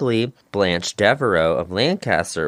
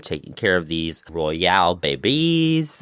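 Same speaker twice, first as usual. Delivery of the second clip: put-on French accent slipping in; 3 semitones lower than usual. Narrating Catherine's life caring for the Lancasters' children, French accent. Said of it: "that was my French accent".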